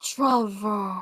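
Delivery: eerie, low, ghostly murmur. Voicing a ghost turning to look at a player: ghostly hard-to-hear mutter. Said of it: "mutter in a very ghostly, hard to hear tone".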